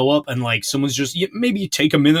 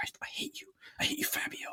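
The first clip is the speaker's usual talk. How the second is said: hushed, soft whisper under the breath; 20 dB quieter than usual. Acting out a man whispering to someone asleep, an imagined whisper. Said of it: "did whisper it to himself?".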